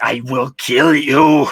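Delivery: loud, slow, drawn-out menacing threatening voice. Showing how a harmless-looking person sounds when going into the voice: threatening voice. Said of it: "I go into my voice".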